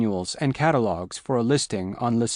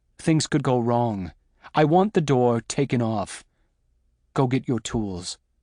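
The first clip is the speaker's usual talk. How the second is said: ordinary delivery, nothing marked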